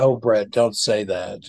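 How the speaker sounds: plain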